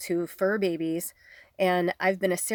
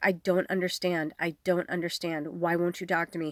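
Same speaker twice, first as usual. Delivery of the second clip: imitated crying, tearful voice. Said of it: "she's crying and she's like".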